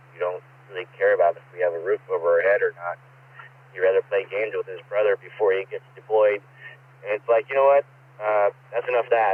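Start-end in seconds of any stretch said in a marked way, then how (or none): none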